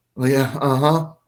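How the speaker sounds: ordinary talk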